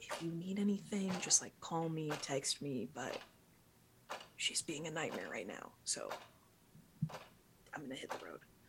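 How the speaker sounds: hushed, soft half-whisper. Morgan, about to leave for the day, speaks to Starfire, half-whispering. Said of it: "she sort of like whispers to you".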